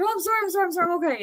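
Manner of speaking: play-acted, very high, panicked, weepy, tearful crying voice. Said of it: "And so I stopped crying".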